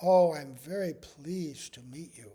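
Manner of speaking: put-on very soft, kind, humble voice. Retelling a first-meeting greeting: imitating Srila Gurudev's softest, kindest voice. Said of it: "he said in the softest voice, kindest voice, humblest voice".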